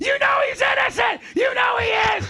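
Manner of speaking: very high, screaming, shrieking rant. Imagining a lawyer screaming at the jury: Sam Kinison screaming impression. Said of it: "Like Sam Kinison".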